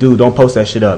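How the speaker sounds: plain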